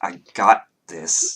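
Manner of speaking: mock speech through clenched teeth. Retelling a scene and quoting what she says, through gritted teeth. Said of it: "through gritted teeth".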